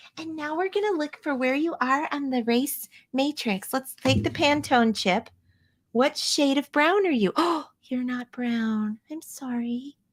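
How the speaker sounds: syrupy, saccharine, sugary-sweet niceness. Mocking how they talk to a child: imitating a sweet, sugary voice. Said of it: "they say it in a sweet, sugary voice".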